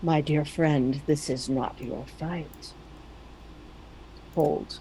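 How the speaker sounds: very deep, calm voice. Narrating a voice heard beyond the wall as a dragon roars; very deep, calm Thranduil voice. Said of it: "a very deep, calm voice. Imagine a voice like Thranduil".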